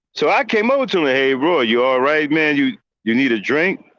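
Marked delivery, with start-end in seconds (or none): 1.0-3.7 put-on sarcastic tone. Retelling how he checked on a friend after a breakup: retelling his own sarcastic question. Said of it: "That was sarcastic".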